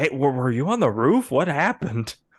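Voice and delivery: dropped into a low, deep-toned register. Voicing the actor who plays Eddie, redoing the line: lower tone of voice. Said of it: "he has a lower tone of voice".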